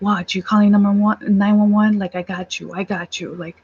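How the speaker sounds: put-on voice of a man shouting. Retelling a confrontation while calling nine one one: imitating a man shouting. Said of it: "he's just shouting. He's like".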